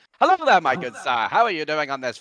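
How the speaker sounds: put-on mid-Atlantic transatlantic accent throughout. Speaker shows the only impression they can do: a transatlantic accent. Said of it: "the only kind of like impression that I can do is a transatlantic an- accent".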